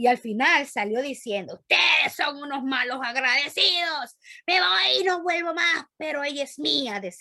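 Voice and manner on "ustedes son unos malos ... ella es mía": booming, resounding, rumbling put-on demon voice. Recounting a demon driven out by prayer, voicing its parting words: booming demon voice. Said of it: "con una voz así retundante".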